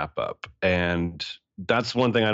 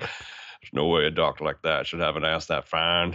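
put-on low drawling voice; 3 semitones lower than usual. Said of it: "lines from the movie that he says".

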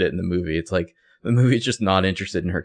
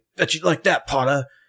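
mock, way too aggressive jeer, pitched up; 8 semitones higher than usual. Retelling a book scene where a bully taunts someone: imitating an aggressive Malfoy. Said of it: "way too aggressive, and he's just like".

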